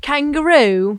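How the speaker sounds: high, loud attempted Australian accent that comes out British. Asked to do an Australian accent, speaker tries one, attempted Australian accent. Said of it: "your Australian accent? ... But it sounds British".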